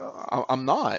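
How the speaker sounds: put-on calm, soft, unruffled, as calm as possible. Retelling how the listener answered her question, in the most calm voice possible. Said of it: "like in the most calm voice possible".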